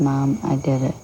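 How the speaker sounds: ordinary delivery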